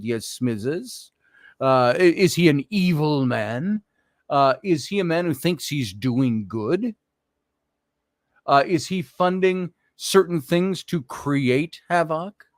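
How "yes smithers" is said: put-on Hungarian accent, lower and quieter. Picturing a rich funder sitting at home giving orders: George Soros accent. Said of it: "he would do it in his accent".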